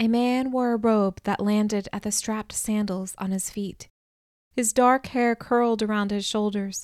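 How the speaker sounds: ordinary delivery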